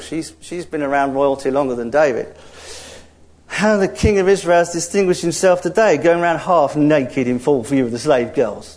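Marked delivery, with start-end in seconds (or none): none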